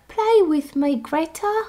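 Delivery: put-on high, slow little boy voice. Retelling a movie's nightmare scene: little boy voice. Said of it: "a little boy voice that's like".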